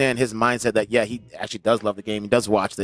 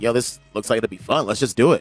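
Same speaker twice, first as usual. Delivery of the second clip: normal talking voice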